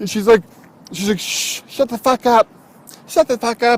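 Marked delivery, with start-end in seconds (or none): 1.2-3.8 high, tiny shushing voice.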